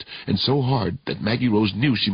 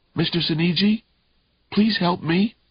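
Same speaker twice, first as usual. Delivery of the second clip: raspy, pitched-up, unrecognizable voice; 8 semitones higher than usual. Reading a thriller, a trapped girl calling for help: raspy voice. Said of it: "Her voice came out raspy and unrecognizable".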